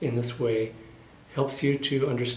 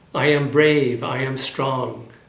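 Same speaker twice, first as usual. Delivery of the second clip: bold, loud, slow and deliberate; 7 dB louder than usual. Leading an affirmation for listeners to repeat: loud affirmation. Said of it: "first loudly".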